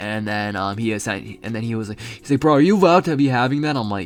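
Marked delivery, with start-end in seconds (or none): 2.4-3.7 really loud, fast, high-pitched blurted call. Retelling what a sixth grader asked the speaker, in a really loud voice. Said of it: "in like a really loud voice".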